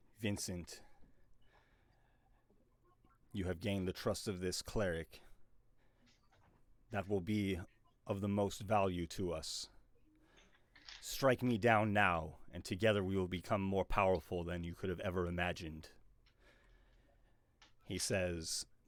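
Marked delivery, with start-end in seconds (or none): 0.2-15.9 deep resonant loud voice. Voicing a voice in a character's head: deep voice in Vincent's head. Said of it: "It is the same deep voice".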